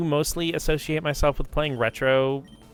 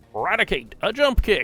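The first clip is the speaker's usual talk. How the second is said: put-on over-the-top Southern accent; 4 semitones higher than usual. Repeating a move call the speaker has said on stream: super stereotypical southern accent. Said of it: "super stereotypical Southern accent".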